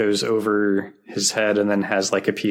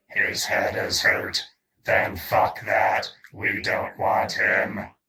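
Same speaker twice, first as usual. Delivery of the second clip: robotic, machine-like cyborg voice; 3 dB quieter than usual. Recapping an episode scene, quoting the Cyberman: Cyberman voice. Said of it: "the Cyberman is like".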